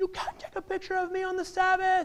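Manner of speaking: put-on horrified boy yelling, shrill, very high-pitched. Retelling how a boy caught being photographed reacted: imitating a boy yelling. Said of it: "he starts yelling at me".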